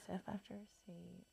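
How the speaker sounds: very soft, unvoiced whisper.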